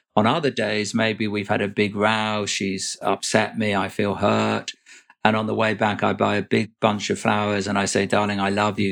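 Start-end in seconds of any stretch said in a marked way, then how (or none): none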